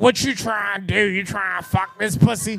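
rough, rasping cigar-smoker's voice. Retelling what Sheikah says on the phone, Sheikah's cancer cigar smoker's voice. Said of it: "cancer cigar smoker's voice".

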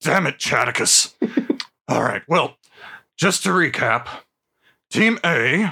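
rough, gruff dwarf voice. A dwarf fighter recapping team assignments for the party in a role-playing game, gruff Drillheart voice. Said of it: "[name] Drillheart, a gruff, one-armed mountain dwarf fighter".

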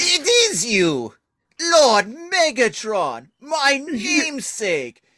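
high, stretched-out tyrannosaurus voice. Retelling a scene where a big Tyrannosaurus greets Megatron: big Tyrannosaurus character voice. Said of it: "you do the voice so much better than I do".

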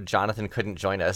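ordinary talk, nothing marked

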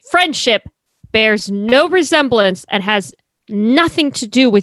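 ordinary delivery

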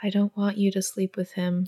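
mock-sad, quiet, hushed pleading tone. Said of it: "just very sadly, very quietly is like".

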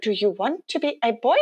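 put-on Icelandic accent. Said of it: "She's in her little Icelandic accent".

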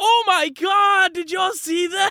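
very high, drawn-out, fake excitement. Acting out a party member's reaction after a win: Jax faking excitement. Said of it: "pretending to be so excited".

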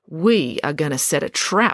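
ordinary delivery

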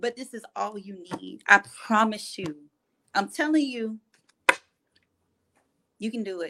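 voice fighting off crying, near tears. Speaker encourages the listener that they can do it, holding back tears. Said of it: "I'm trying not to cry".

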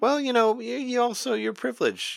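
very high, squeaky mocking imitation.

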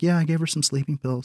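acted-out offhand, unbothered, casual tone. Retelling a movie scene where the mom answers the dad: imitating a nonchalant mom. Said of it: "the mom's all nonchalant".

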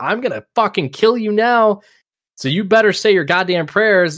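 put-on, high, terrifying screaming. Describing a scary scene where he screams at them, retelling screamed threats. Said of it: "as he's screaming at them".

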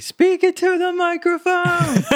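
very high, drawn-out heckling yell. Recalling yelling at a live stream on the tv: retelling yelling at the tv. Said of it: "when I was yelling at the".

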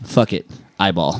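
gentle, mild, unforceful, non-aggressive delivery. Imitating a friend's catchphrase when she doesn't say it aggressively. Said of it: "if she doesn't say it so aggressive, it comes out like this".

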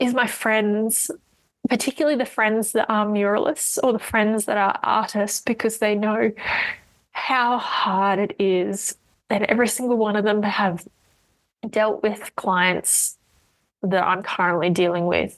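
tearful, close to crying, holding it together. Podcast host explaining what has helped lately, close to tears. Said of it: "I'm going to start crying".

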